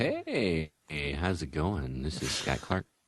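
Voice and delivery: soft, put-on, sultry, seductive voice. Introducing himself on the podcast, trying to sound seductive. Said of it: "nice try at, uh, sounding a little seductive there".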